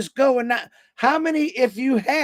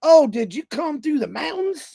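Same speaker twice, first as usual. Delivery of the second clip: put-on local North Carolina accent; 4 semitones higher than usual. Retelling what a gas station lady asked: imitating a North Carolina accent. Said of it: "here comes that accent".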